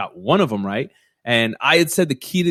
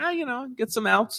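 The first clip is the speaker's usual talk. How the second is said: very high and soft put-on voice; 12 semitones higher, 7 dB quieter than usual. Acting out a pitcher's answer to questions after his no hitter, as a high-voiced Vandermeer impression. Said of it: "I don't know why I make him have such a high voice".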